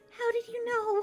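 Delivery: muttered under breath. Game master voicing a tiefling replying to the party, muttered under her breath. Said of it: "she just mutters under her breath".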